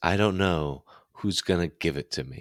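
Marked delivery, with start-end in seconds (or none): none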